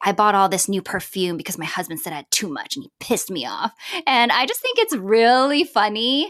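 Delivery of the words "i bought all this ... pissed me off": mock whispering. Retelling a TikTok creator's video: imitating Jessica whispering. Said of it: "is whispering 'cause she's like".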